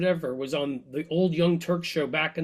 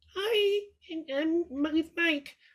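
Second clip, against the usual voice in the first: put-on weak, very high, very slow baby voice; 12 semitones higher than usual. Imitating the man's wife, in the baby evangelical voice. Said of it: "the baby evangelical voice".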